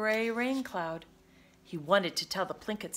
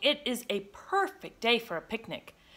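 ordinary delivery

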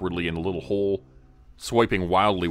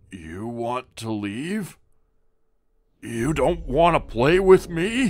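guttural, grinding throat voice, rising pitch; 6 semitones higher than usual. Reading a story, the narrator voices a stone-eyed figure speaking to them, voice growing deeper. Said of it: "his voice getting deeper with every syllable".

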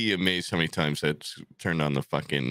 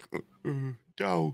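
very high, rough, creaky, craving cartoon voice; 10 semitones higher, 3 dB quieter than usual. Imitating someone doing a Homer Simpson impression: Homer Simpson voice. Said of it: "He's like".

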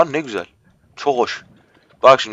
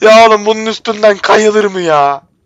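exasperated, frustrated, pitched up, near tears; 7 semitones higher than usual. A streamer complaining while playing a game, frustrated, close to tears. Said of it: "Ya gerçekten ağlayacağım ya".

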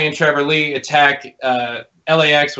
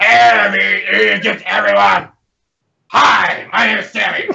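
put-on yelling wrestler voice, pitched higher; 5 semitones higher, 3 dB louder than usual. Mocking a wrestler who yells everything he says: imitating Sami Callihan yelling. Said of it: "He just yells and screams everything he says".

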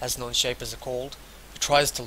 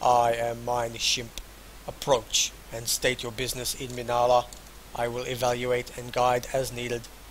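even, level, flat, deep monotone drone; 4 dB quieter than usual. A narrator voicing a servant mind that greets the players, flat, deep voice. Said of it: "it says in a flat, deep voice".

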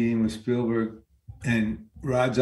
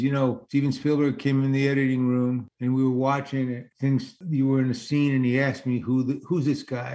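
ordinary talk

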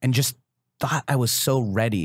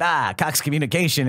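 mock over-the-top wild delivery, higher; 4 semitones higher than usual. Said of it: "going bananas".

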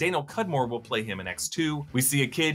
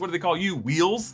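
usual speaking voice

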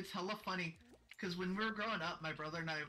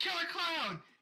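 very high, loud, shrieking yell; 12 semitones higher, 7 dB louder than usual. Retelling scaring a younger brother at the back door: retelling own yell. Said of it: "all I do is just yell".

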